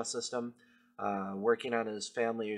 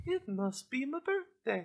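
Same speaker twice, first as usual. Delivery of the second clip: very high-pitched, cartoonish old man voice. Joking about running from a radio station, doing the Family Guy old man voice. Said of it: "old man voice from Family Guy".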